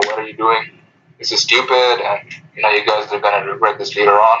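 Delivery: ordinary talk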